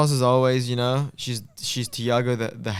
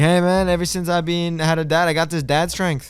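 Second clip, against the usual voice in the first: put-on Los Angeles accent; 4 semitones higher, 3 dB louder than usual. Quoting a guy from LA, in a put-on Chicano-style LA accent. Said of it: "he's Armenian but he's from L A, so he sounds a bit like an essay. He's like".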